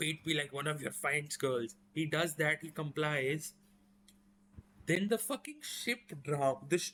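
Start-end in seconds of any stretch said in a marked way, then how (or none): none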